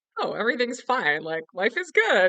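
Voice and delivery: high, loud, cheery outburst.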